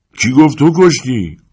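loud, high, yelled shout. By Dr. Robinson's body, someone answers Potter's plea, shouted. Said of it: "یکی داد زد".

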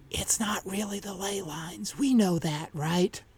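soft, hushed half-whisper aside. Narrator voicing a character's aside while another goes for her car: half-whispering. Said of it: "Julie leans over and whispers".

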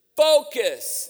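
the word "focus" stressed, high and loud. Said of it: "Say focus".

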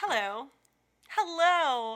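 high, polite front-desk secretary voice. Talking about a hard past job, showing the voice it left: secretary voice. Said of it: "Now I just have a secretary voice".

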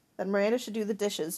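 ordinary delivery

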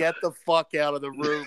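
ordinary talk

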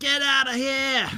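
very high, loud put-on Australian accent. Retelling an australian man on a mobility scooter on the freeway, australian accent. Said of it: "That was a pretty good Australian accent".

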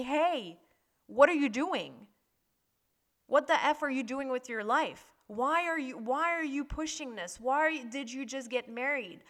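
insistent, screaming, yelling voice. Retelling panic attacks, acting out the higher self's inner voice screaming. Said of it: "my higher self screaming at me".

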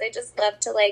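mocking, sarcastic tone. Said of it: "I'm being sarcastic towards myself".

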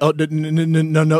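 very slow, halting, stammering stutter. Retelling his nervous answer to a fighter who got in his face: imitating his own stuttering. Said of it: "stuttering and shit".

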